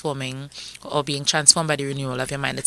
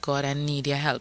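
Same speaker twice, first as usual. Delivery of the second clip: plain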